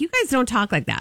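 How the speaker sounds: ordinary talk, nothing marked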